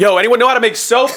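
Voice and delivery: put-on screaming voice. Imagining manga artists sharing a house, imitating Boichi screaming. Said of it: "What is he screaming about today?".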